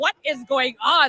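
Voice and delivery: high, stunned, bewildered, shocked rat voice. Imitating the rat's reaction to the screaming: imitating a shocked rat. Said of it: "The rat was shocked".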